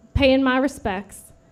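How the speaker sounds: put-on South Shore accent. Quoting the father's reply about where he was going: South Shore accent. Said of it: "in his telltale South Shore accent".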